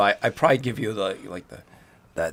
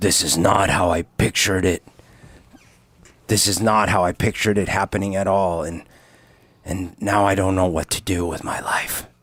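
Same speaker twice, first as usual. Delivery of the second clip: raised, sideways, private aside; 5 dB louder than usual. Speaking to a companion so another can't hear, under his breath. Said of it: "kinda under my breath".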